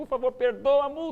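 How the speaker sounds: mock-tearful pleading. Pastor retells begging the officer writing a fine to forgive it; retelling tearful pleading. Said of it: "eu fui chorando".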